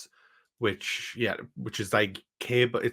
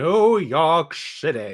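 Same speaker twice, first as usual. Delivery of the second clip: loud, pitched-up shout, belted out big; 5 semitones higher, 7 dB louder than usual. Quoting a favourite TV moment: imitating Matt Berry shouting. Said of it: "Matt Berry shouting".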